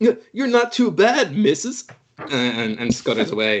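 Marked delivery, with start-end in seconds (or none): 0.0-1.9 put-on squeaky, very high-pitched little child's voice. Narrating a tabletop game scene, the speaker voices a kid in a backwards cap: kid voice. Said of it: "the kid with the backwards cap goes".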